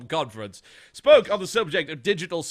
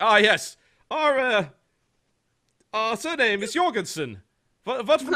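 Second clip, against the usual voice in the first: slow, careful, high put-on German accent; 6 semitones higher than usual. Imitating an imagined parent choosing a baby name: put-on German accent. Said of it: "and I'm going Germany".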